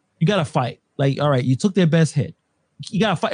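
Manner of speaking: ordinary talk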